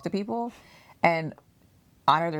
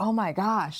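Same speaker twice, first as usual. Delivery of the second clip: mock gushing praise, higher; 3 semitones higher than usual. Retelling how people came up afterward: imitating people gushing. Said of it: "they're gushing over me".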